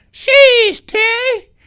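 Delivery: very high, very loud, shrill put-on voice. Showing another speaker how Le'Veon sounds: imitating Le'Veon. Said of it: "If I was to sound like Le-, Le'Veon, it'd be more like this".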